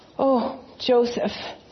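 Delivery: words pushed out on a strained groan. Narrator reads Mary calling to Joseph, groaning. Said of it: "Mary groaned".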